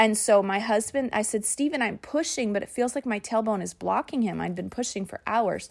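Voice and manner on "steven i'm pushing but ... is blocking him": ordinary talk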